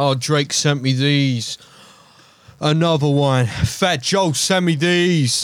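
slow, boastful celebrity voice drawn out with swagger. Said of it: "I don't know why I'm speaking like [name]".

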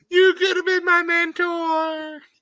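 high, slow mock sob, wailing. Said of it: "Darby Allin's in the back crying".

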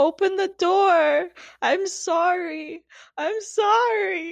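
very slow, high sobbing wail, "sorry" stretched. Retelling a neighbour pleading at a door: imitating someone crying and screaming. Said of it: "crying and screaming out to his girlfriend".

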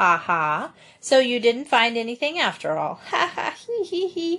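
smug, self-pleased, triumphant gloating chuckle. A narrator reads a man reacting to the boys finding nothing, chuckling triumphantly. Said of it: "he began to chuckle".

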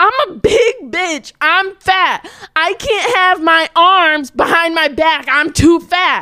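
very slow, high, loud, stretched-out scream. Telling how a woman being cuffed kept screaming; imitating a woman screaming. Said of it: "Like she just kept screaming".

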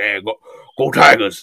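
put-on very low, deep, thick Southern accent. Imitating LSU's coach for another speaker, do an Ed Orgeron impression with a thick Southern accent. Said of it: "thick southern accent".

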